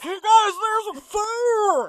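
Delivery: very high, very loud, fake disguised yelling voice. Recapping a scene, the speaker acts out a man's warning: imitating a disguised voice. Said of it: "to disguise his voice".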